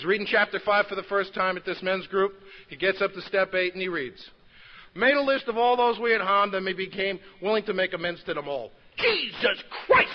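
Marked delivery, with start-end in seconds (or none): 4.9-10.1 put-on heavy New York accent, higher and louder. Retelling a man reading step eight aloud: imitating Nino's heavy New York accent. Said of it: "He had a heavy New York accent".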